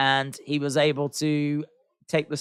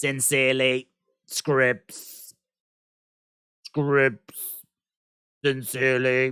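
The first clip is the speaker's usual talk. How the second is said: cheap, bad, synthetic robotic computer voice; 2 semitones lower than usual. Speaker reads out the closing of a quoted message in a robot voice. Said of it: "I sound like a robot for no reason".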